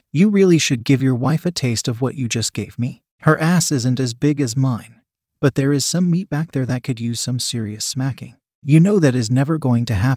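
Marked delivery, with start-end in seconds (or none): none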